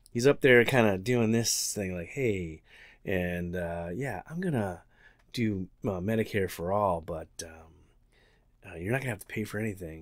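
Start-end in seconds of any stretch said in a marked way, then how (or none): 2.1-10.0 put-on slimy, smooth calm, much quieter. Mocking the mannerisms of a man he doesn't like, imitating a calm, slimy manner. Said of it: "calm and in like a slimy manner".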